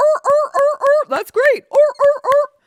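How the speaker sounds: very high, loud, seal-like barking. Mocking a politician's fans cheering her news: mocking seal-like clapping fans. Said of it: "Like little seals".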